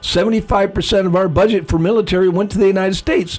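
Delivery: ordinary talk, nothing marked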